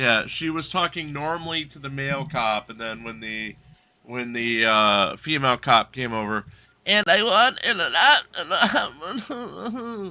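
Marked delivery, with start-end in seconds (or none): 6.9-10.1 put-on very high, drawn-out childish little-kid voice. Mimicking how a woman talked to a female cop: imitating a little-kid voice. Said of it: "suddenly starts talking like a little, a little kid".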